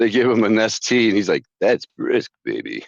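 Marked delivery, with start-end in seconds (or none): 1.6-2.8 raspy, rough, creaky battered boxer drawl. Acting out an old claymation tea commercial: Rocky voice. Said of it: "a good impression".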